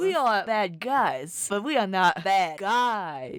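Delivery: slow, drawn-out mock Russian accent. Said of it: "You gotta say it in a Russian accent".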